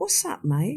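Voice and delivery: put-on casual, calm, soft, light tone. Retelling what Ron said, all calm: Ron's calm reply, mock-calm. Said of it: "all calm".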